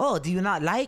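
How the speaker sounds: put-on heavy Dutch accent. Retelling a man's reply after remarking on his accent, heavy dutch accent. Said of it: "you have like a really heavy accent".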